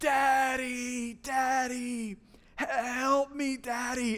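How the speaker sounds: very slow, high, drawn-out wailing cry. Retelling a daughter's cries as the doctor stuck the wound: imitating a child crying out loud. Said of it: "she is just crying at the top of her lungs".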